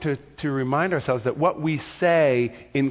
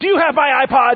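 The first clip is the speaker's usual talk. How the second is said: furious, very loud, very high, shrill angry delivery; 11 semitones higher, 9 dB louder than usual. Example of a question said with anger, in an angry tone. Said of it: "That's anger".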